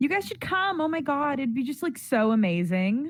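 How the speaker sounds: chatty, casual, talkative tone. Narrator voicing Mila as she talks to friends by a poster, Mila speaking very loudly. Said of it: "you can hear her very loudly saying".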